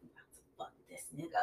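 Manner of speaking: fast, conspiratorial whisper.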